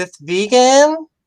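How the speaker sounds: put-on very high California valley girl voice. Speaker retelling a lady's question when handed a flyer; valley girl voice. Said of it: "she asked me in her valley voice".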